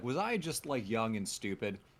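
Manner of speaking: ordinary talk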